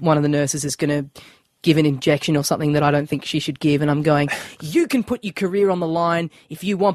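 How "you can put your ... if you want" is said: grave, serious, theatrical, dramatic delivery. Retelling a training-video scene with a nurse: imitating a serious, dramatic delivery. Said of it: "I had to get all serious and dramatic".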